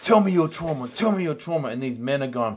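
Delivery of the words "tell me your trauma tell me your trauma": aggressive, repeated, loud, high-pitched yelling. Retelling how a martial arts teacher pushes his students: imitating Jason Wilson yelling. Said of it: "he's yelling at him".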